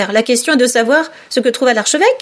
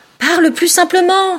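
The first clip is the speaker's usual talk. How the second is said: high, sudden, cried-out exclamation; 5 semitones higher than usual. The eaglet interrupts the dodo's speech, exclaiming. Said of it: "s'exclama l'aiglon".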